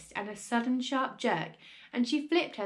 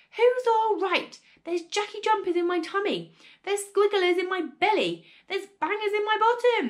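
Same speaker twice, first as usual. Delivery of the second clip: put-on shouting, furious, high-pitched old woman voice; 7 semitones higher, 3 dB louder than usual. Narrator reads the grandmother's answer after the fire is put out: yelling. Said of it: "she yelled".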